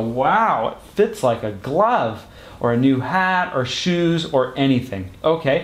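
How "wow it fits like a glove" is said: ordinary talk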